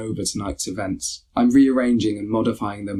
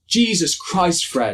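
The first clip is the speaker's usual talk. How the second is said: furious, despairing, pitched-up outburst; 8 semitones higher, 3 dB louder than usual. Narrating the group finding the takeaway closed, turning on fred: angry, despairing voices. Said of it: "Come the angry voices of despair".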